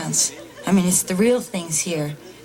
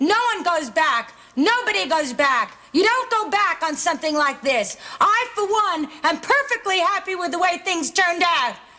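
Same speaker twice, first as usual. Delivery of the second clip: yelling, very high-pitched and worked up; 11 semitones higher than usual. A character in a drama speaks to someone he doesn't know, yelling. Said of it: "I'm sorry I'm yelling at you".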